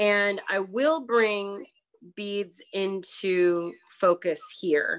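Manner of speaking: slowed-down, slow speech with pauses.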